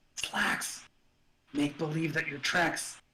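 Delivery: quiet, low half-whispered voice. Half-whispering a message back over the comms to Slacks: half-whispering over the comms. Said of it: "I'm gonna whisper back on the comms".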